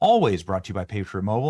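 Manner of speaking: "always" stressed, lifted and loud. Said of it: "I say always".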